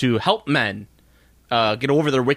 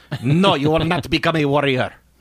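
put-on Israeli-accented speech; 3 semitones higher than usual. Act out the mom telling her daughter no about being a warrior, in a weird Israeli accent. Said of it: "gotta do it with a weird Israeli accent".

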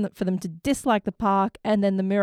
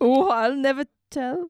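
bad put-on Scottish accent, high and slow; 5 semitones higher than usual. Quoting a cartoon line in a bad Scottish accent. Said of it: "An Indian Scottish person living in Germany".

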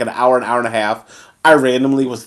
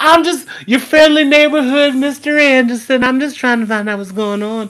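creepy, very high-pitched voice; 12 semitones higher, 3 dB louder than usual. Playing neighbor Mr. Anderson peering over while checking mail; Herbert from Family Guy voice. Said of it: "why did I sound like Herbert the Pervert".

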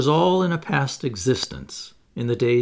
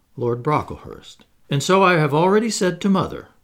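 usual speaking voice

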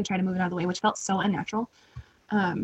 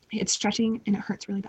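plain

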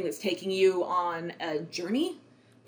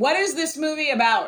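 mock, very loud, high blurt at full volume; 8 semitones higher, 4 dB louder than usual. Retelling what a woman behind in the theater asked: imitating a very loud question. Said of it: "said very, very loudly".

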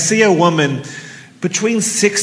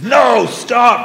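gut-level, guttural, stern, pitched-up dad yell; 5 semitones higher than usual. Retelling how he yelled at her to stop, a guttural dad-voice yell. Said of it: "The best dad voice I got".

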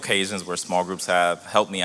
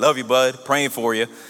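put-on Southern Alabama accent, pitched up; 5 semitones higher, 4 dB louder than usual. Retelling what a man said while giving him a hug, in an Alabama accent. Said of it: "in his awesome Alabama accent".

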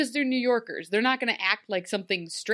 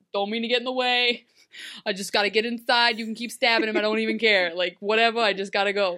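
heavy, laid-on, thick New York accent; 3 dB louder than usual. Describing a passerby they wanted in the scene, thick New York accent. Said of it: "a person with a really thick New York accent".

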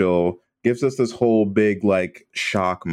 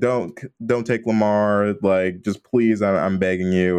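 acted pleading. Retelling a scene in which a woman pleads with Krampus, acting out a plea. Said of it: "But she basically pleads".

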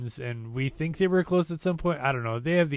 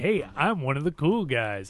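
hammed-up, exaggerated mock hip guy voice. Imitating a character hamming it up with millennials: imitating someone hamming it up. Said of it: "hamming it up with them".

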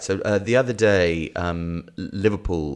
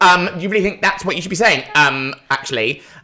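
very high, loud put-on voice; 11 semitones higher, 6 dB louder than usual. Imitating a partner second-guessing what is said: imitating his partner's voice. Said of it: "That's his voice that he does".

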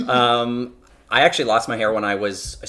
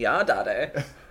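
fake, put-on British accent; 4 dB quieter than usual. Trying out a short line in a put-on accent. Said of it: "let me try saying it with a British accent".

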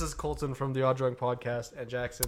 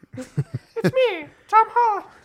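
very high, very loud, slow, swooping, drawn-out belting; 9 dB louder than usual. Joking that the actor is present: Tom Holland impression. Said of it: "that's him".

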